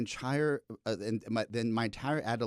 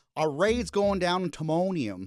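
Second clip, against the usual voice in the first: put-on higher-pitched Baltimore accent; 7 semitones higher, 7 dB louder than usual. Quoting an actor's line from a show: imitating a Baltimore accent. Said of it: "you hear the Baltimore when he says".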